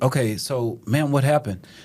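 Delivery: plain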